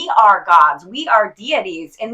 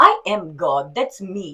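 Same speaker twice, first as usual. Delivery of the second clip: put-on, cute German accent, very slow; 2 semitones lower than usual. Speaker quoting what their mom used to say, imitating mom's german accent. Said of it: "in her cute little German accent".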